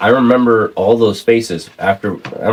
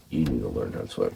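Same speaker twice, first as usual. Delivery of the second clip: put-on deadpan, dropped very low, straight-faced; 11 semitones lower, 15 dB quieter than usual. Retelling what his dad said after pulling him from the water: imitating a deadpan remark. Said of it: "he had to pick me up and straight face".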